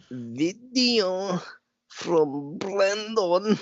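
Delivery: mock struggling-reader voice. Reading aloud a pop-up on the screen: put-on accent of someone who can't read well. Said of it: "What was that accent?".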